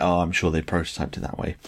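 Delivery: ordinary talk, nothing marked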